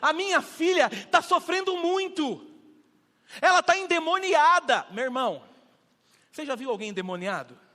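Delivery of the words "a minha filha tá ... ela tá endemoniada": woman's high, slow, loud, drawn-out cry. Acting out a woman calling to Jesus: imitating a woman shouting. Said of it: "ela começa a gritar".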